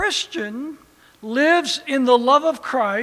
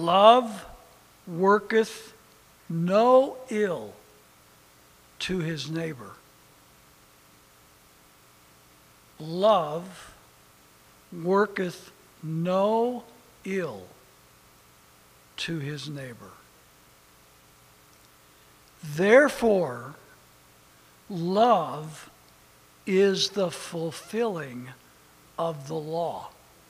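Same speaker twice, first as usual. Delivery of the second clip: reading carefully, very slowly; 7 semitones lower, 6 dB quieter than usual. Speaker reads a Bible verse aloud to the audience, very slow and careful. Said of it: "I'm going to read it very slowly and carefully".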